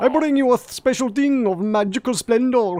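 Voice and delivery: grand, high-pitched salesman character voice. Voicing the umbrella salesman offering a gift: umbrella salesman character voice. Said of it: "Umbrella salesman".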